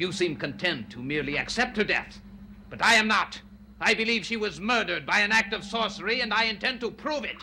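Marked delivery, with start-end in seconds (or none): 1.4-7.4 angry, high, heated shouting. Arguing in front of gentlemen over a sister's death, shouting. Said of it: "Gentlemen, please stop shouting".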